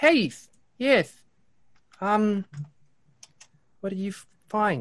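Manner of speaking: upset character voice. The narrator voices Fibblestib as the party returns to the workshop, upset Fibblestib. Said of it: "You sound upset".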